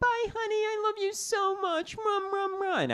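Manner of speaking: weird, cartoony put-on voice, very high and slow. Speaker imitates how his partner says goodbye when he leaves, in a weird cartoon voice. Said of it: "she still only says "I love you" in these weird cartoon voices".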